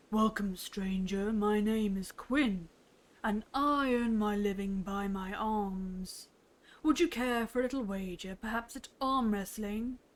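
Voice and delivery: deep voice with "arms" stretched and drawn out. Narrating the story, the big man in the hut speaks: Quinn's deep voice. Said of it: "starts to speak in a deep voice".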